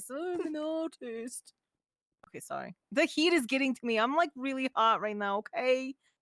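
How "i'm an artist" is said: put-on high, fancy, artsy voice. Mocking a fancy person who calls himself an artist, in a put-on fancy voice. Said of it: "Look at this fancy fuck talking like this".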